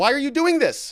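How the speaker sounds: high, loud, mock outrage.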